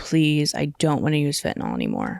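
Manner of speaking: mock-sobbing, tearful voice. Recalling praying in a rehab shower, retelling a sobbing plea. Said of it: "like sobbing to God".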